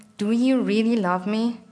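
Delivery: ordinary delivery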